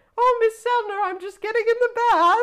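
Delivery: put-on loud old woman falsetto.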